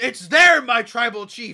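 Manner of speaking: high, loud scream. Retelling a wrestling moment with a chair, imitating Paul Heyman screaming. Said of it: "And he's screaming".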